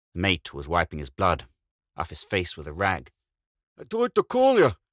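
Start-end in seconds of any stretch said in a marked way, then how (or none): 3.8-4.7 very high, loud, shrill whine. Reading an adventure story, voicing the guard answering, whining. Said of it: "the guard whined".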